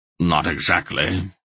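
plain reading voice

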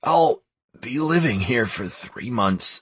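half-strangled croaking. Answering a question about the headman, croaking through a half-strangled throat. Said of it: "I croaked through a half-strangled throat".

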